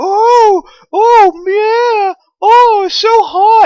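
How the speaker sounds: play-acted very high, very loud excited shrieks. Describing women in a crowd screaming at a speaker: imitating women's excited screaming. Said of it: "like that type of scream".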